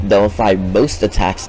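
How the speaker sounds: most punched with a falling stress.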